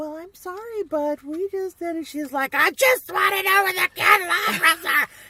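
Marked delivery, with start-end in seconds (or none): 0.0-2.1 sweet, very high-pitched little voice. Retelling how Jenny answered an aggravated woman, in her nice little high voice. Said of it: "in her nice little high voice".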